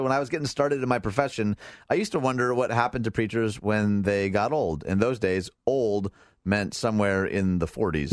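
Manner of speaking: ordinary talk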